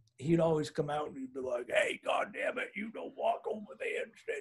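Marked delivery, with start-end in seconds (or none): 1.7-4.4 rough, gravelly, breathy, soft whispered voice. Recalling a man who tended the landowners' field; imitating a gravelly voice. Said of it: "he had this kind of like gravelly voice".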